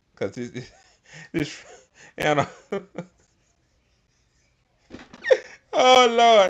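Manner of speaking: talking through laughter. Reacting before playing a clip, laughing hard while talking. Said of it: "I'm laughing so hard I'm shaking the camera".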